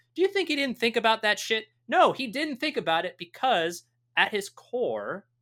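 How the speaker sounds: getting angry, worked-up, heated, high-pitched rant. Talking about Thanos, the speaker gets heated. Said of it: "I'm getting heated".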